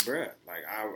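normal talking voice

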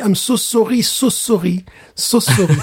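put-on French accent. Telling listeners what to say if it happens to them, in their best french accent. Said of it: "avec votre plus bel accent français".

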